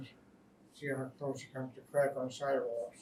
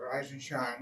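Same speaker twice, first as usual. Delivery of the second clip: plain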